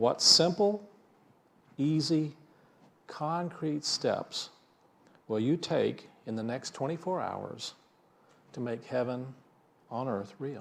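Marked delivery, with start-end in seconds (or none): 0.2-3.8 each of simple, easy, concrete given weight. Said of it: "I emphasize the words simple, easy, and concrete".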